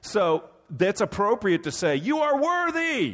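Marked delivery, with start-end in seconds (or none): 2.0-3.1 high, slow yelled voice. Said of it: "to yell out".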